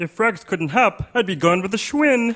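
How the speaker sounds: put-on cartoon frog voice. Asked for impressions, performing a Kermit the Frog voice. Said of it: "I can do a Kermit the Frog".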